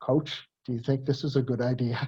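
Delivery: gently spoken, quiet and hushed. A speaker retells a voice over his shoulder as he lines up; quiet voice. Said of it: "I hear this quiet voice over my shoulder says".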